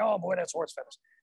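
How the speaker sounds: soft, little raspy grandpa voice. Speaker recalls his grandfather's famous saying, imitating him: raspy voice imitating grandfather. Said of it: "A little raspy voice".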